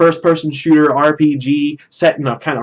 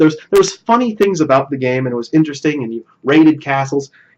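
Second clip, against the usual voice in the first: plain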